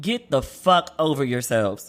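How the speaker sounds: deep, slow, emphatic bass voice. Telling families to stop being hurt by pride: with bass in the voice. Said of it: "with the bass in my voice".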